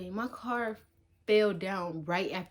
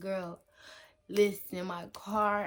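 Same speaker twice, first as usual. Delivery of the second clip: acted, slow, tearful crying-out. Retelling calling a friend after a tire fell off: retelling crying on the phone. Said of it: "I just was crying out".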